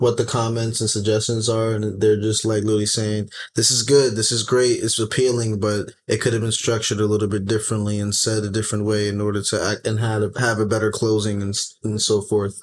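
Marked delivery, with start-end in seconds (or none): none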